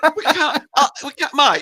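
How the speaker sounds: high, loud, urgent shout.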